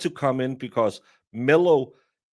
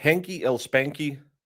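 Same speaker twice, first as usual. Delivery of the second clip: ordinary talk, nothing marked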